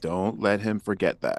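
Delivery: hushed whisper. Whispering a warning to another character in the game: whispering. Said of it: "I whisper to Buzzy and I say".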